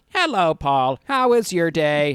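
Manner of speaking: very loud, slow AI assistant voice. Imagining a restaurant table tablet that talks: AI voice. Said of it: "A I voice that was like".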